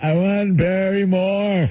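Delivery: slow, simple-minded voice. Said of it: "he's telling the operator".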